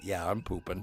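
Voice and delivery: talking-horse character voice. Retelling a sleigh ride moment, voicing a horse. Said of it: "the horse looked over its shoulder and it was like".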